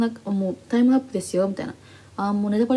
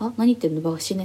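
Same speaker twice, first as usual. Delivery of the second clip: ordinary delivery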